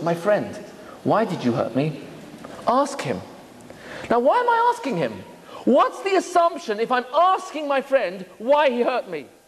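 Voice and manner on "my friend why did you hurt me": gentle, soft-spoken. Explaining a teaching, the speaker shows how to ask a friend who hurt him: gentle soft voice. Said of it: "in a gentle voice, voice, soft voice".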